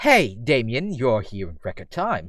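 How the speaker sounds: put-on professorial, learned voice with a slight British accent. Voicing Hugo greeting Damien: professorial, slightly British Hugo voice. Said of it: "it was more professorial. It was still a bit British".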